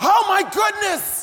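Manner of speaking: loud preacher shout.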